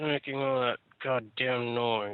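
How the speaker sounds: tired, soft, weary grumbling. Narrator voices Donna coming from upstairs because of the noise, tired grumbling. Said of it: "a bit tired as she grumbles".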